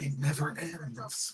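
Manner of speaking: soft, very quiet half-whisper under the breath. Comparing two ways of saying a line, the speaker imitates how he half-whispers it. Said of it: "he's almost like whispering".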